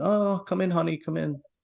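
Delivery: high put-on Russian accent, bent old lady voice. Retelling a lady inviting him in at her door, in a russian accent. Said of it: "I hear a Russian accent".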